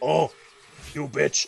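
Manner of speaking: fake rough, gruff, creaky, manly tough-guy voice. Retelling the prince's line from a game demo: imitating a fake gruff manly voice. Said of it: "his voice is just like".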